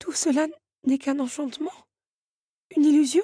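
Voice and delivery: high-pitched, stuttering, stammering delivery. Narrator voicing Belle replying to the countess, stammering. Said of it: "bégaya Belle".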